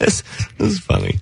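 speaking through amused laughter. Reacting to a story about a car crash, laughing. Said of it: "Why are you laughing?".

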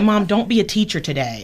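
ordinary delivery

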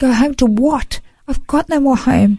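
put-on high, broken-down, pleading voice. Recounting answering a voice that told them to go home, retelling breaking down. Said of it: "I just broke down in a fetal position".

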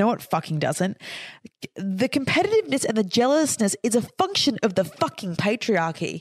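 furious rant, cursing hard. Answering a quoted critic's message about women competing: angry. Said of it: "I'm getting very angry about this".

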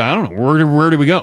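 normal talking voice

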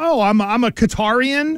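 ordinary talk

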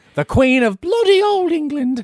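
shrill, very high, belted regal voice. Talking about Queen Elizabeth having a tough time: Queen Elizabeth impression. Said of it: "Excellent impression".

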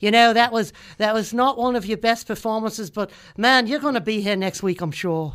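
loud attempted Australian accent. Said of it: "I can't do an Australian accent".

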